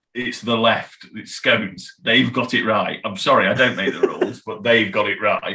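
ordinary delivery

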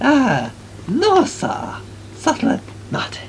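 bad, sing-song fake Chinese accent. Answering another character's question about vampires, in an atrocious fake Chinese accent. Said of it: "that's an atrocious Chinese accent".

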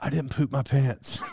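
very low, hushed whisper. Retelling what a woman whispered in the speaker's ear: imitating her whisper. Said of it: "all she whispers to me".

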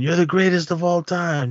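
high-pitched fawning scream. Mocking how Paul Heyman praises a wrestler: imitating Paul Heyman screaming. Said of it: "he's screaming".

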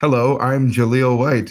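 robotic put-on voice.

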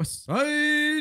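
high, hyped-up, excited shout.

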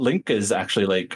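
plain

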